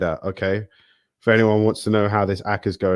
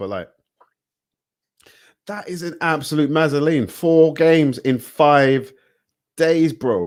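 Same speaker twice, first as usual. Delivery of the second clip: loud, high, much-raised ranting voice; 6 semitones higher than usual. Ranting and then apologizing for being loud, a raised voice. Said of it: "I'm raising my voice a lot".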